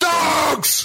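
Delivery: very high, long, stretched-out shriek. Redoing a shouted word after being corrected: screaming. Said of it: "I've got to scream that again".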